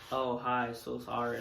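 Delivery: flat, level monotone with no emotion at all. Describing a scene in their video where one character bumps into another: Will's monotone voice. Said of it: "he's very like monotone".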